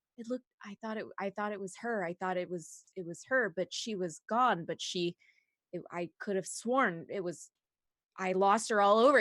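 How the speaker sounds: rambling, half-heard muttering under the breath. Acting out a man muttering to a listener who just nods: imitating a man muttering. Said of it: "he's just muttering like".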